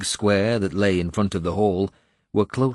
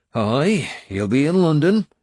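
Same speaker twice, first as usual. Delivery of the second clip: dour, grim, slightly pitched-up; 7 semitones higher, 4 dB louder than usual. Reading a novel aloud, voicing Finan's reply about an enemy: grim. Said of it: "Finan said grimly".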